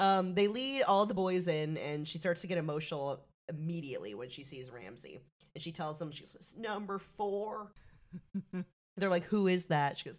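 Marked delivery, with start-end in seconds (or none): 6.6-7.7 put-on voice like a cartoon boy. Retelling what a woman said on seeing a man, in Bobby Hill voice. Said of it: "I'm giving her Bobby Hill voice".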